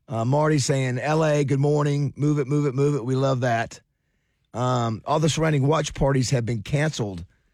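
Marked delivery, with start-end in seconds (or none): none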